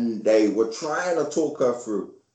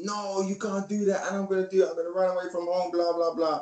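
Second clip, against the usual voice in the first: high-pitched protesting scream; 7 semitones higher, 3 dB quieter than usual. Retelling a childhood argument with his mum: retelling his own screaming. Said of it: "I remember I was screaming".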